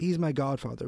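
ordinary delivery

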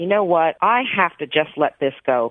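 ordinary delivery

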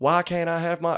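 fake American accent. Retelling an airport bag dispute, quoting a woman in a put-on American accent. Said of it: "American accent".

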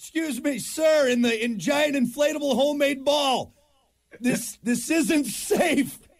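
high, official-sounding shouting. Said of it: "if you're at the Coast Guard, what are you yelling".

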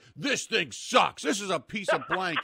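loud, high, fed-up frustrated yell. Retelling being stuck with a dead snowblower: retelling a scream. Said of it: "screaming outside".

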